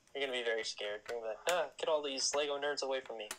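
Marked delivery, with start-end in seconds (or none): none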